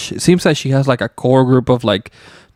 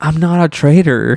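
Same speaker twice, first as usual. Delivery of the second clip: crestfallen, wounded, sad, deeply upset voice; 4 semitones higher than usual. Retelling a player's words as he was voted off: imitating Tony sounding upset. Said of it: "he's just so fucking upset".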